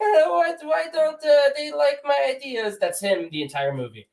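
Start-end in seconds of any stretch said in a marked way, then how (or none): 0.0-2.8 cartoonish Italian voice, much higher, slower. Speaker imitates an actor's performance in a film: Mario voice. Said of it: "he does this Mario voice the entire time".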